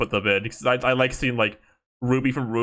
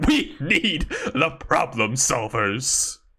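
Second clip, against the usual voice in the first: slow, stretched-out, swooping-pitch dramatic movie-style delivery; 4 semitones higher than usual. Imitating that scene from Monsters, Inc: Monsters, Inc scene line. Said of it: "but it's like".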